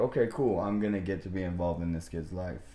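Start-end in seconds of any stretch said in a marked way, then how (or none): none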